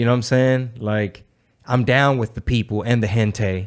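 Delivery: normal talking voice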